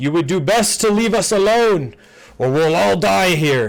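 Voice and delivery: high-pitched shouting. The narrator voices a man at the back shouting to the group: shouting across the room. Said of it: "he is going to shout out across the room".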